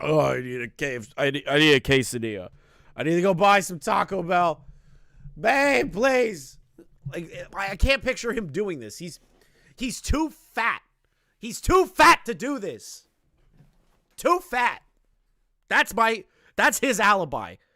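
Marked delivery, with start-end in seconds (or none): 0.0-6.6 completely drained, spent, worn-out voice. Acting out someone worn out from shaking a spray can: imitating an exhausted Boogie. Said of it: "he shakes it three times and goes".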